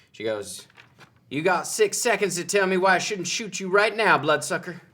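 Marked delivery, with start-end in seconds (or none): 1.2-4.7 put-on loud, high Southern American accent. Narrating the scene, speaker voices a character holding Mark at crossbow point: Southern accent.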